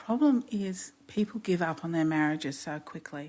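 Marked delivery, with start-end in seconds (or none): none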